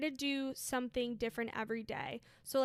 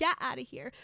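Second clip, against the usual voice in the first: put-on fired-up, angry yelling outburst; 4 dB louder than usual. Retelling how a friend reacted when a man at the gym touched her: imitating a fired-up outburst. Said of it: "she was all fired up".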